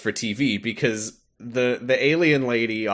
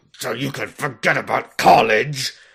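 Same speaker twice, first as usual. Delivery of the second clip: yelling, but reined in and bottled up; 2 semitones higher, 4 dB louder than usual. Telling how a father scolds his son Tommy downstairs, retelling a hushed yell. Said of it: "he he quietly yells at Tommy".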